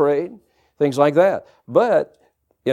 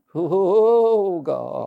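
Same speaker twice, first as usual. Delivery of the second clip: put-on whine with drawn-out oh; 3 semitones higher than usual. Recalling how they prayed in old Pentecost days, with a whiny voice. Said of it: "We knew how to put the whine in the voice".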